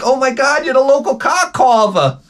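very high-pitched woman's voice. Acting out a woman answering a flirt at a bar: imitating a woman at a bar. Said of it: "She's like".

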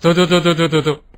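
loud, repeated rural chicken-calling cry. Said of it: "赶紧发，不要解释".

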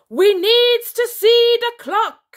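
shrill, very high, very loud, slow drawn-out shout. Narrator reading the Worldstopper General ordering his terribles: shouting. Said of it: "shouted the Worldstopper General".

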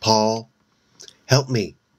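trembling, quivering, fearful, frightened voice. She calls to the ghost, paul, in a quivering voice. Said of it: "she called to the ghost in a quivering voice".

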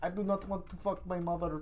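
put-on Indian accent. Describing a parody video, quoting Marty as played in it, imitating an Indian accent. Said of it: "this little Indian guy plays Marty".

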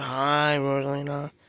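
unhappy. Greeting another character at the toy house: sounding unhappy. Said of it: "You don't sound happy".

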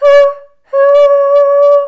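high, loud train whistle hoot. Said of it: "You wanna try with me?".

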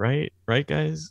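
mock hesitant, unsure tone with doubt showing. Retelling how Nick Ross was funny in the book: imitating Nick Ross sounding doubtful. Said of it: "you could hear the doubt in his voice".

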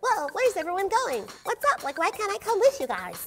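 high-pitched put-on voice. Suggesting how the house would talk, in a high-pitched house voice. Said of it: "*high pitched voice*".

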